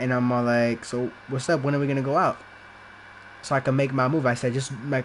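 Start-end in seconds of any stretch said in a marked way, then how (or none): none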